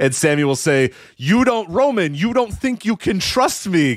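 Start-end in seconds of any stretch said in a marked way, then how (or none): 1.2-3.9 very high, slow, deliberately over-enunciated acted voice. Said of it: "They talk very slowly so you can make sure you hear every single word".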